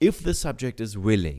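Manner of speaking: if the subject is willing pressed, rising a touch. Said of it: "I stress the words".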